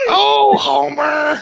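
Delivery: each word squeezed out high and rough. Just after being told never to do the impersonation again on this show, in a Marge voice. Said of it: "That's your Marge impersonation".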